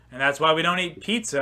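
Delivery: ordinary talk, nothing marked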